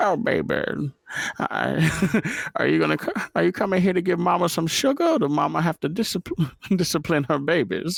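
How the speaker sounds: very high-pitched character voice. Asked by another speaker to do it, speaker performs the Mama character voice. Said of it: "do the mama voice for me".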